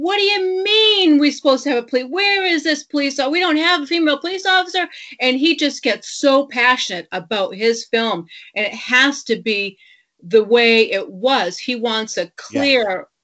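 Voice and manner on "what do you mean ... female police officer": mock upset, high, rapid screaming. Retell how he got upset on set over a missing female officer, imitating Peter Berg screaming. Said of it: "he's screaming on the set".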